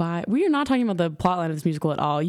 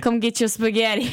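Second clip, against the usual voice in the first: put-on Brooklyn accent; 5 semitones higher than usual. Trading joke accents with the other speaker, speaking in a brooklyn accent. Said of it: "Brooklyn accent".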